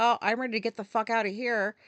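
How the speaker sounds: usual speaking voice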